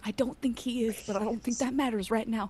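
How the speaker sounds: whispering. Speaking in character during a tense office scene: whisper. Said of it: "I just whisper".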